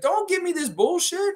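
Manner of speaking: very high, shrill, freaking-out rant. Retelling the lifeguard's reaction to the yak: imitating someone freaking out. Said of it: "He's freaking out".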